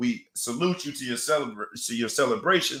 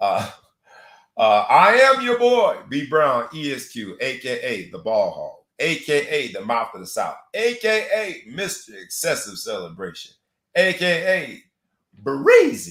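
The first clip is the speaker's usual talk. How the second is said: loud, slow, deliberate, every word spaced out; 5 dB louder than usual. Introducing yourself, you give all of your nicknames and aliases, said slow this time. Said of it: "I said it slow this time".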